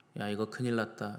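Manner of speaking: bland, flat, emotionless deadpan, no feeling. Imagining Isaiah saying the line flatly, mock-flat emotionless delivery. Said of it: "이렇게 맹숭맹숭하게 했을까요?".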